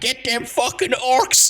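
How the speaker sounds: very high, furious, angry Alabama accent. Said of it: "He's gonna have like a an Alabaman accent".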